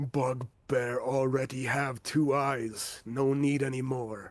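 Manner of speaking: rough, gruff monster voice through laughter. Voicing the bugbear in the back for the group, gruff laughing bugbear voice. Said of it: "Gruff laughing as he's, as the bugbear in the back".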